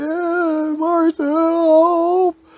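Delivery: very high, frantic scream. Retelling how a tackled neighbor called out: imitating a man screaming for help. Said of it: "the guy was screaming".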